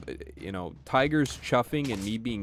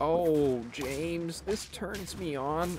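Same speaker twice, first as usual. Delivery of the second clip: put-on higher-pitched elderly woman's voice; 8 semitones higher than usual. Acting out what the ladies would say, in an old lady voice. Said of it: "why they sound like an old lady".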